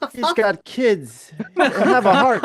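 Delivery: high, slow, laughing, pleading voice.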